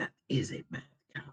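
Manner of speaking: breathy, hushed whisper. A character whispers to a companion as he passes her: whispering. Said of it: "Cha whispers to Niavar as he passes her".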